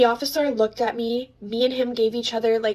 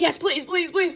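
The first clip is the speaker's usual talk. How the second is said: put-on frantic, desperate, hysterical pleading, high-pitched; 6 semitones higher than usual. Retelling begging a police officer to come into mom's house: retelling hysterical pleading. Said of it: "I was hysterical".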